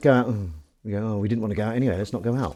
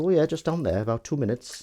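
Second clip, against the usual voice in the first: badly done, clumsy put-on Welsh accent; 4 semitones higher, 6 dB quieter than usual. Retelling a reply to someone asking for directions, in a bad Welsh accent. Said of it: "Was that bad Welsh accent".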